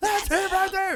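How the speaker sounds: very high, full-volume shriek. Acting out being an obnoxious fan in the theater: pretend screaming fan. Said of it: "he's just screaming".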